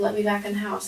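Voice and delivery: put-on angry, arguing voice. Retelling a phone call with him: imitating someone arguing. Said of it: "he just started arguing again".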